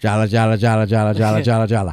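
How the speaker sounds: droning, flat, one-note monotone gabble. Retelling how Koreans imitate Americans: imitating fast monotonous American talk. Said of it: "we talk very, very fast and monotonous".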